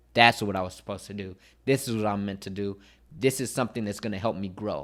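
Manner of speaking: ordinary talk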